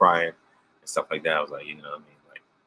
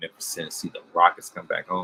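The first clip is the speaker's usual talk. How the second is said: usual speaking voice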